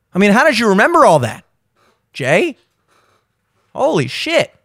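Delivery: heavily sarcastic with swooping pitch. Commenting on a speech clip to another speaker, sarcastic. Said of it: "of course I'm being sarcastic".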